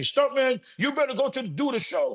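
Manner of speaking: put-on high-pitched screaming, insistent. Retelling a manager's demand at the hospital, imitating someone screaming. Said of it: "he started screaming at me".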